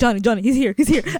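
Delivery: put-on fearful tone. Retelling how they called out a warning at work, acting out being scared. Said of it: "I actually I get scared".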